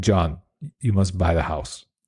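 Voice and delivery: put-on, imitated German accent. Quoting Roland speaking to his attorney, imitating Roland's German accent. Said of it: "In Roland's, you know, German accent".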